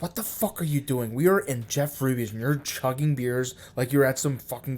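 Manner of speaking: mock furious outburst, very mad, tearing into. Retelling his wife's reaction at dinner: imitating his wife, very mad. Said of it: "and she was like".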